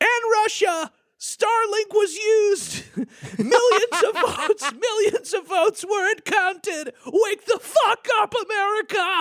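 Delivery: put-on shouting. Reacting to a woman's rant, imitating her shouting. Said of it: "so she's clearly shouting".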